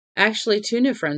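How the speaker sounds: ordinary delivery, nothing marked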